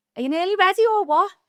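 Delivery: high, loud impatient shout. Retelling shouting from a ship cabin to someone in the bathroom: retelling a shout. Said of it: "I just shout out".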